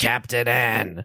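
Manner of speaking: put-on smoker's voice. Describing an awful cartoon, quoting how Mega Man talks, in Mega Man's smoker's voice. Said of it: "They gave Mega Man a smoker's voice".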